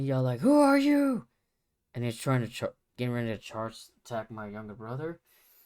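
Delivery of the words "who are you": yelling, higher pitched and louder. Retelling a confused father who mistakes someone: imitating father yelling. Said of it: "My father yells, like".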